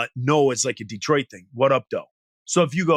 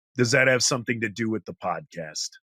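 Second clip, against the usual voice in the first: mock flat, unimpressed, completely deadpan; 3 semitones lower, 4 dB quieter than usual. Retelling a festival meeting, quoting what Nate Sjogren said: imitating Nate Sjogren's deadpan. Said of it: "completely deadpan".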